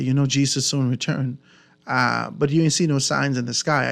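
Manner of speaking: usual speaking voice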